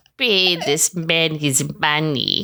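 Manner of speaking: awful, terrible, put-on fake Russian accent. Asked by the other speaker to try the film line: bad Russian accent. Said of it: "Let's hear".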